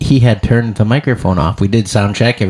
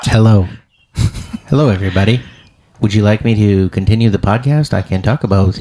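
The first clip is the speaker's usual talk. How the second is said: put-on robot voice. Speaker jokes a robot replaced absent co-host Dean Berg, Dean robot voice. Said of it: "I had to get a Dean robot".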